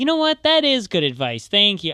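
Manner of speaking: acted extra-friendly, accommodating, super nice agreeable voice. Retelling a reply to the kid's advice: imitating own super nice tone. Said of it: "I was just being super nice".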